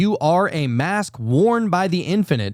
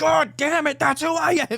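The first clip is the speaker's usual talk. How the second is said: very high, frantic outburst, voice shooting way up; 12 semitones higher than usual. Retelling a movie scene where Adam Sandler keeps being asked who he is: imitating Adam Sandler going crazy. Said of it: "just going crazy as he does".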